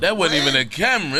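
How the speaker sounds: ordinary talk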